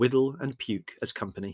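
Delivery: plain reading voice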